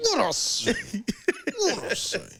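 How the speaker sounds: very high, very loud hard shout, full blast. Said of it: "I had to turn into [name]".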